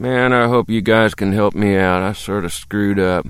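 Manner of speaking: sighing, embarrassed, sheepish tone. Reading a story, a narrator voices a university kid asking for help, sighing, embarrassed. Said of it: "The guy looked embarrassed. He sighed and said".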